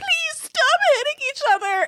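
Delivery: mock, very high, tearful sobbing voice. Retelling getting between two fighting roommates: imitating a crying plea.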